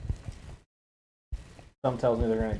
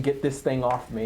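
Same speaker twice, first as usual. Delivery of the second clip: plain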